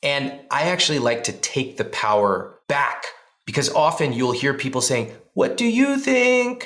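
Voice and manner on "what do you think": very high, whiny, drawn-out plaintive pleading. Mimicking how people often ask for opinions: mock plaintive voice. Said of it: "in this very plaintive voice".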